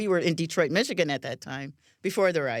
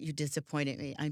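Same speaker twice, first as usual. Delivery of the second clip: put-on sad, disappointed female voice, much quieter; 8 dB quieter than usual. Retelling how her mom reacted when she found out, imitating a sad, disappointed mom. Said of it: "look me in the eyes with these sad eyes".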